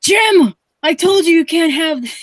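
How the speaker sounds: scolding, high-pitched Irish brogue. Retelling what his grandma said the next morning, imitating her Irish brogue. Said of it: "Irish grandmother".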